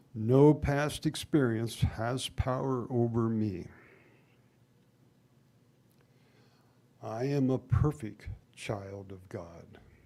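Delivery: careful, unhurried reading. Reading a prayer poem aloud so each line can resonate: reading slowly. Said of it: "I'm gonna read it slowly".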